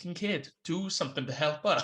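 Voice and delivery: ordinary talk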